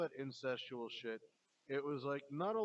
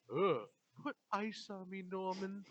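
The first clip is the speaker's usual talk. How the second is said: slow voice, every word dragged out; 5 semitones higher than usual. Retelling a movie scene, imitating Norma asking for ice. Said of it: "I love your Norma voice".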